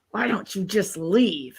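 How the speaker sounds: spoken through clenched, bared teeth. Retelling a reply to a plea for help: imitating talking through bared teeth. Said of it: "through bared teeth".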